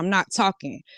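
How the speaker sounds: ordinary talk, nothing marked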